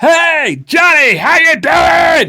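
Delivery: very high, drawn-out yell. Telling a story in which characters greet someone: yelling a greeting. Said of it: "And they yell".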